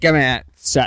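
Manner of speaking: very loud, belted-out cartoon cloud voice. Joking about someone playing an ocarina: Lumpy Space Princess voice. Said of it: "You sound like the cloud, the cloud off of Adventure Time".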